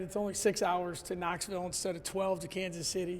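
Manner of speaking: ordinary talk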